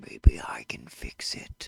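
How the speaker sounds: deep, possessed voice like a possessing spirit. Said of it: "And a deep voice comes out".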